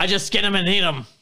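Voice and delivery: put-on Australian accent. Answering questions about crocodiles in a role-play bit, put-on Australian accent. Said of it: "you're going Australian".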